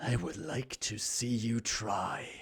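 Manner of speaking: distorted, warped voice with echo. Narrator voicing a voice speaking telepathically into two characters' minds, warped, echoing voice. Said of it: "in a warped, echoing voice".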